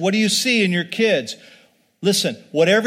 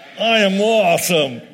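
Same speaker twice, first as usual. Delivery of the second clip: sassy, attitude-filled delivery. A speaker leads a crowd in saying it again, with attitude. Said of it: "Now say it with some attitude".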